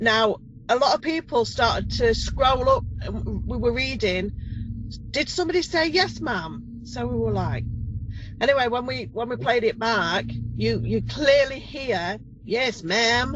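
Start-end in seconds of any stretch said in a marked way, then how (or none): 12.4-13.3 put-on American-Canadian accent. Speaker repeating a voice heard on a played-back recording: American-Canadian accent. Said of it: "like an American-Canadian accent".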